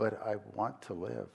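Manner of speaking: very quiet, meek, mousy, almost sweet little voice. Retelling a woman's reply while explaining medical necessity to her, imitating a quiet, mousy voice. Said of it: "in this quiet, non-confrontational, but quiet, mousy, almost sweet voice".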